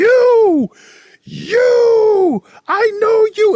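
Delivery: shrill, very high, loud, very slow, drawn-out acted yell. Retelling a stranger spotting Tarantino behind him: imitating someone screaming. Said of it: "he starts screaming at Tarantino".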